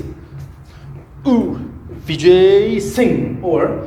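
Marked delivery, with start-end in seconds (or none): 1.3-3.4 slow, drawn-out, higher-pitched effortful call. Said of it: "now say this".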